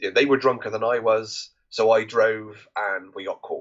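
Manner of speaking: plain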